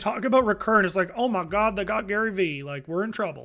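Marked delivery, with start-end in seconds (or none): 1.2-3.4 worried-sounding put-on Southern accent. Imitating worried people reacting to news, in a put-on southern accent. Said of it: "I don't know why I went Southern there".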